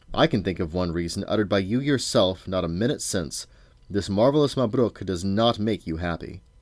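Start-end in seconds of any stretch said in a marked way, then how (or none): none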